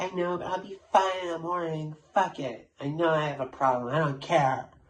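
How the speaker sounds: put-on slurred drunk talk. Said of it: "she just sounds super drunk".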